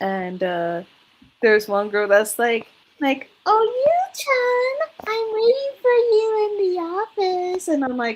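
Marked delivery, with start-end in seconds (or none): 3.4-7.7 put-on very high, drawn-out, girly anime-style voice. Retelling what a character says to Yuki: imitating a girly anime character's voice. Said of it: "Why do you have to talk like that?".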